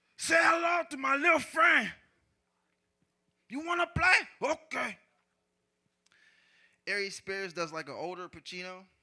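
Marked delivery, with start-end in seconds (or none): 0.2-4.5 loud, high-pitched, hard, forceful bellow. Showing how Godfrey does his impression on his podcast, do a young Al Pacino impression. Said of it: "Godfrey does the the young Al Pacino".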